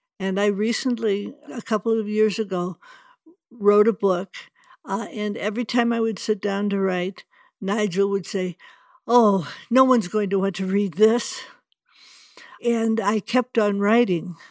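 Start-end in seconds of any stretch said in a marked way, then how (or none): 9.1-11.4 put-on sarcastic, nasty voice. Retelling what the inner perfectionist says while writing a book: sarcastic and nasty. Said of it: "Nigel would be sarcastic and nasty".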